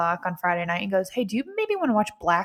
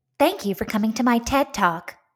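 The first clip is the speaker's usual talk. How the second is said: robotic assistant voice; 3 semitones higher than usual. Speaker retrying a line while another person rates the attempts, fake Siri robot voice. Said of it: "That was like my fake Siri robot voice".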